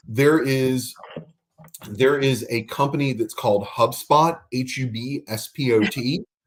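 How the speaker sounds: slow, deliberate, spelling out letter by letter. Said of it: "I'll speak slowly".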